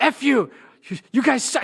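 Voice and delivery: mean, sudden, shrill, loud screaming. Retelling how a defendant in court would scream: imitating someone screaming. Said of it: "she would just be screaming".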